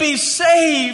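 very high-pitched, imploring, begging plea. Retelling a plea to a crowd to be saved: imitating Peter pleading.

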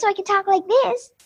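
ventriloquist character voice, really high-pitched. Showing the voices they can do for their puppets, in a really high-pitched voice. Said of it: "I have a really high-pitched voice".

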